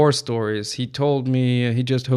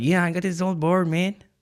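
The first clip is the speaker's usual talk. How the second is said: put-on Mexican accent in English, pitched up; 6 semitones higher than usual. Retelling what a man said about his old board, doing his accent in english. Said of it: "I'm gonna try to do his accent in English now".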